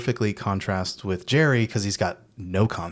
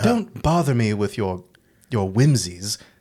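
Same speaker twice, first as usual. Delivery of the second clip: put-on dismissive theater actor voice. Retelling a scene with a dismissive theater actor: dismissive theatrical Peter Vincent voice. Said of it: "it's just so dismissive of him".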